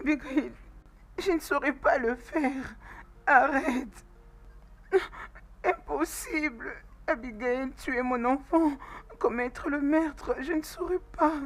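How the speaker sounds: sobbing, pleading voice. In an acted scene, a character answering Vigrid, crying. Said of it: "arrête de pleurer".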